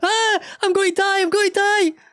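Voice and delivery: shrieking panic, very high and loud. Describing a guy who forgets push to talk, imitating someone screaming like a girl. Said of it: "starts screaming like a fucking big girl".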